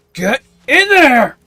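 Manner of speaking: giantess bellowing, very high and very loud. A game master voices a female giant during a scene, female giant yelling. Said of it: "here's the female voice yelling".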